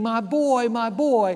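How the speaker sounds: slow, drawn-out screaming cry. Retelling a tribe's ceremony where the son is taken: imitating a mother screaming. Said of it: "she's screaming".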